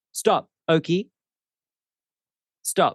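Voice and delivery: no-nonsense dad voice. Telling Oki to stop playing before the wound is cut, in dad voice. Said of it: "I have to use dad voice".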